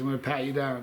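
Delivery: plain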